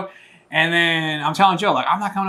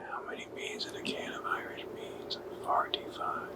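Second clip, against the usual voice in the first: hushed whisper with a lilting Irish accent. Talking on mic on Saint Patrick's Day, telling an old joke in an Irish accent. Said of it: "that's his Irish accent".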